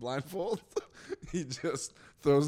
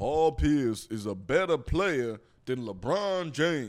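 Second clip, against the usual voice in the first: slow, deliberate, drawn-out delivery; 3 dB louder than usual. Complaining about a sports commentator, imitating Perkins talking slow. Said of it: "Perkins also talks slow".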